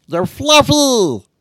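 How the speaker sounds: very high-pitched cartoon creature voice. [name] speaking as Stitch, who was just invited to join the show; Stitch voice. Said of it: "it's a really good Stitch voice".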